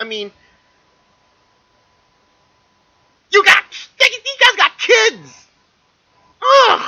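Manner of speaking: freaking out. Reacting to a photo of a child cosplaying as Chewie, freaking out. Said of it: "Sorry I'm freaking out here".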